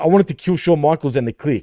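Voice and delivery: ordinary talk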